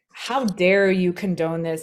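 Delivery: mock demeaning, belittling tone. Acting out the message a boycott sends: imitating a demeaning scolding. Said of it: "in a very demeaning sort of way".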